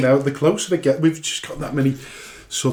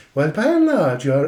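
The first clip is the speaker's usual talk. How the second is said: attempted Irish accent; 2 semitones higher than usual. On a show, trying to perfect an irish accent while reading, attempted irish accent. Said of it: "try and perfect my Irish accent".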